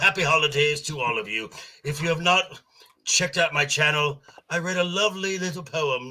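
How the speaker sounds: high comic villain voice. Guest introduced as Joker Voice greets everyone and plugs his channel, Joker voice. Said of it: "Joker Voice".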